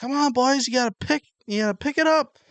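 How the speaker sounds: loud, very high-pitched hollering yell. Retelling what a dad yells at the team: imitating a dad yelling at the team. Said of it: "and then he'll be like".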